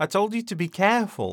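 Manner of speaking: amused, chuckling exclamation. [name] to Thomas after Thomas burns his finger on the meat; exclaiming with a chuckle. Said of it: "[name] exclaims with a chuckle".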